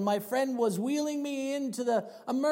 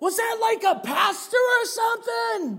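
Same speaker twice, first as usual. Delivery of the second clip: high, loud yelled line; 10 semitones higher, 6 dB louder than usual. Retelling a man's question shouted back at the speaker: imitating a man yelling back. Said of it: "he yells back at me".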